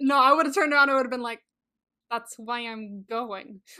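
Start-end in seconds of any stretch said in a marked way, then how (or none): 2.1-3.6 mock gritted-teeth delivery, much slower. Imagining what they would have said back to a boss, through gritted teeth. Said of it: "with, like, gritted teeth".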